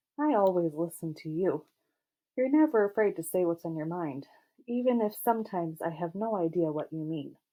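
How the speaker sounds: ordinary delivery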